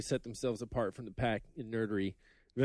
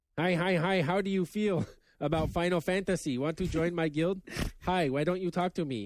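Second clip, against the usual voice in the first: high, eager, put-on nerdy voice; 6 semitones higher, 3 dB louder than usual. Speaker acts out nerds approaching her once they learn she loves games, nerd voice. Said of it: "I think she's using the nerd voice here".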